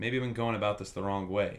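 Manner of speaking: normal talking voice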